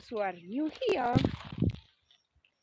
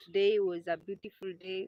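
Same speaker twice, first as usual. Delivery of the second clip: ordinary talk, nothing marked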